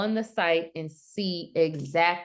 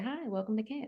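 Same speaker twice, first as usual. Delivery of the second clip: soft, pitched-up fake phone-answering voice; 5 semitones higher, 9 dB quieter than usual. Answering a business call from camp, the speaker puts on a fake phone-greeting voice. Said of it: "I put the fake voice on".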